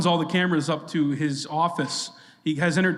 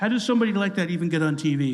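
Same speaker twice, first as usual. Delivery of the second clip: sulky, pouting delivery. Retelling a televised boardroom statement about Rosie: pouty Donald Trump impression. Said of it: "he's pouty, and he's like".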